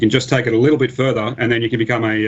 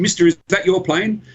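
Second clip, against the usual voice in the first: put-on really excited, high young boy voice; 8 semitones higher than usual. Retelling what a boy on a dirt bike asked: imitating an excited kid. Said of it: "really, really excited".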